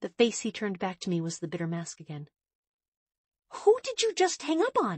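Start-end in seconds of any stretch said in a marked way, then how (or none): 3.5-5.0 infuriated, very high, swooping outcry with gasp. A first-person narrator confronts Jacob after he hangs up the phone, gasping, infuriated. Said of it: "I gasped, infuriated".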